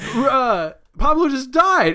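shocked outburst, high and slow.

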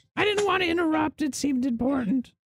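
very high, tiny jungle goblin voice. Voicing a small jungle goblin answering a call at the door: small jungle goblin voice. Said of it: "you see the small jungle goblin standing in front".

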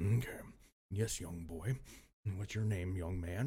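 gentle, soft, coaxing, soothing voice. Retelling how a lady calmed a shaking young man: imitating her healer voice. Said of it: "talking in this voice".

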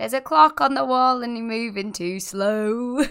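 put-on Sheffield accent, slow and drawn out. Describing northerners in a show set in a Sheffield council estate, in a Sheffield accent. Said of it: "That's my Sheffield accent".

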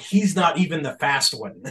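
acted-out, thrilled, excited, swooping call-out. Retelling a cheer at a long touchdown run: imitating his own yell. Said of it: "I just yelled out".

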